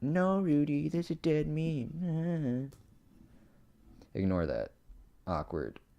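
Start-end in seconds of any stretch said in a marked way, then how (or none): 0.0-2.7 very high, slow, cracking mocking voice, words stretched out. Responding to a listener right after a pun, in a mocking voice with a voice crack. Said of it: "voice crack when I was trying to do a mocking voice".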